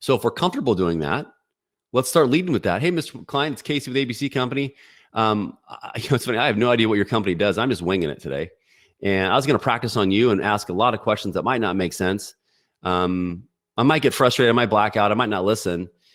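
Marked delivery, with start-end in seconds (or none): none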